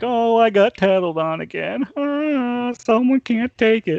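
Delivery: very high, jeering, laughing, mocking taunt. Retelling how a reprimanded boss went around the shop: imitating someone laughing mockingly. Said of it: "she went around the shop laughing".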